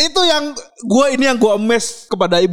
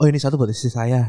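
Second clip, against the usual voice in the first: mock mutter, much lower; 9 semitones lower, 4 dB quieter than usual. Retelling what he murmured while taking two servings, retelling a mutter. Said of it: "aku sedikit menggumam".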